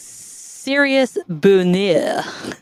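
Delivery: put-on French accent. Saying a joke listener name for another speaker: bad french accent. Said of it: "imagine you're doing it in a French accent".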